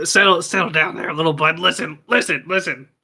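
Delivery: loud stage whisper, trying to be quiet. Playing Harriet after something attacked her, trying to settle it, loud stage whisper. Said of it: "I'm whispering all that".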